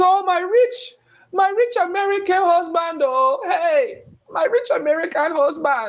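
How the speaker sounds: very high-pitched, unhurried, drawn-out voice. Joking about finding a wife abroad, acting out an imagined wife. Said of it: "I might go to Nigeria and find my wife. She's".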